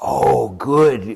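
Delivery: warm praising voice as used for pets. Showing how to reward dogs verbally after they do their duty, dog praise voice. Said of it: "It is my reward voice".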